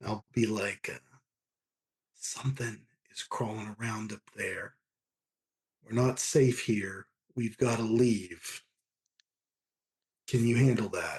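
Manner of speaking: half-whispered all the way through, no voice. Warning a companion in character to leave silently: half-whispering. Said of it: "I guess I'll whisper to her".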